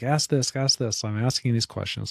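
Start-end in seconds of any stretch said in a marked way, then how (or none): 0.0-1.0 acted-out pressing, insistent yelling. Retelling questions called out during a call with the doctor: imitating someone yelling. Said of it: "my wife's yelling at me".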